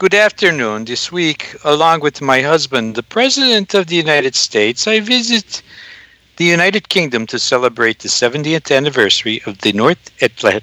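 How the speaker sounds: put-on Slovenian accent. Reading a mock public service announcement as the First Lady: Melania Trump impression. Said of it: "my best Melania impression".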